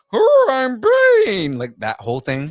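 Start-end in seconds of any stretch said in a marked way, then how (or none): 0.1-1.5 very high, very loud dim-witted shout. Retelling how a cartoon plays Bane: dumb Bane voice. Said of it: "They intentionally do the dumb".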